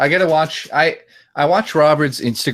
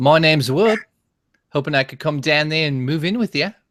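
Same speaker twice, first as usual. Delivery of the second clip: put-on Australian accent; 3 semitones higher than usual. Speaker attempts an impression of Wood at another's request; imitating Wood. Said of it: "Even though that doesn't sound like him".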